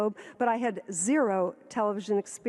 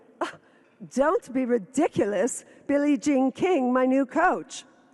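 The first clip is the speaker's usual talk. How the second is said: put-on heavy Czech accent; 3 semitones higher, 4 dB louder than usual. Retelling what she answered when asked about new furniture: thick Prague accent. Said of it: "from Prague with a really thick accent".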